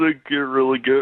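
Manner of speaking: put-on choked-up voice. Showing how his voice sounds when he cries, demonstrating a choked-up voice. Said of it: "my voice sort of chokes up like this".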